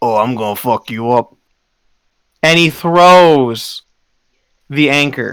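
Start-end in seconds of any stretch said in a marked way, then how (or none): 0.0-1.3 deep, threatening, hulking sea-creature brute voice. Voicing a giant muscular shark that threatens a player: voicing a giant shark man. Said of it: "you all hear in common".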